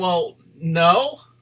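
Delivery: acted halting, unsure, very hesitant delivery. Retelling another person's answer to a question: imitating a hesitant reply. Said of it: "real hesitant".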